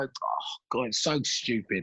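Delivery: soft, near-whispered, exasperated sigh of disbelief. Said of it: "I look back and go".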